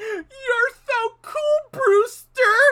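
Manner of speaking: very loud, very high, very slow acted-out laugh-talk. Retelling a movie line a character says: imitating laughing while talking. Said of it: "He starts laughing, he goes".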